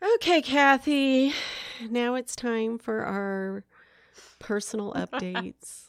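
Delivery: weary, tired, flat delivery without uplift. Host turning to the co-host to start personal updates, sounding tired. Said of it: "You sound tired when you say that".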